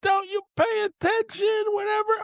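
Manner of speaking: put-on very high, furious, angry screaming. Recounting yelling at a batter who didn't run to first, retelling a scream. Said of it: "I'm screaming".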